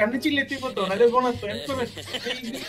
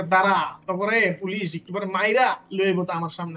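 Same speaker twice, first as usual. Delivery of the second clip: ordinary talk, nothing marked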